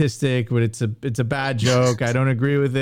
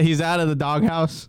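usual speaking voice

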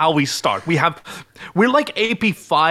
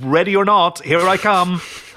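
put-on yell at easy, moderate strength; 3 semitones higher than usual. Retelling how the droid called out to the hiding spiders: imitating a yell. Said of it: "like he just yelled".

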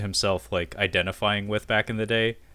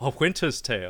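put-on smug, self-satisfied voice, quieter; 2 semitones higher, 6 dB quieter than usual. Quoting a favorite movie line: imitating Paddy Considine's self-satisfied delivery. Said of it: "his delivery and his, his, like, self-satisfied grin".

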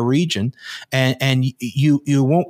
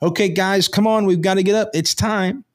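acted, mildly raised voice, slightly higher in pitch; 6 semitones higher than usual. Waking sleepers who have to get up, in a slightly raised voice. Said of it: "I might raise my voice a little bit".

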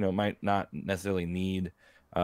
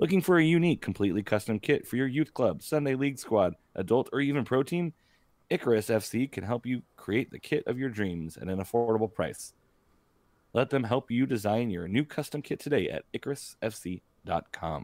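close-mic radio announcer voice, like an on-air advert read; 4 semitones higher than usual. Reading out an advertisement in a radio voice. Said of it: "I love your radio voice".

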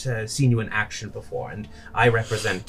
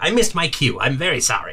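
put-on piercing, loud, shrill old woman calling out; 4 semitones higher, 5 dB louder than usual. Narrating a scene, a late arrival calls across the clearing in a shrill old woman voice. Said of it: "says a shrill voice".

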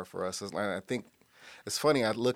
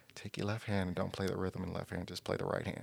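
hushed, half-whispered voice; 7 dB quieter than usual. Retelling an instruction he gave each person in the band: imitating a half-whisper. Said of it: "And he whispers it".

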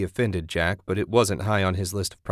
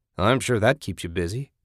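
plain reading voice

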